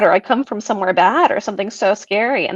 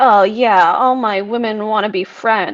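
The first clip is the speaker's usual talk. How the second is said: mocking, slow, sarcastic, self-pitying, pitiful drawl. Mimicking men who complain about their female friends: mocking imitation of such men. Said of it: "men like this who are just like".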